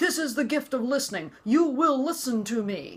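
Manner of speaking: high, screaming, loud yell. Recounting a violent moment in the marriage; imitating someone screaming. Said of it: "screaming and yelling at me".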